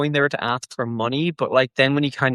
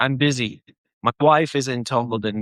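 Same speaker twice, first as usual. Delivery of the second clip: ordinary talk, nothing marked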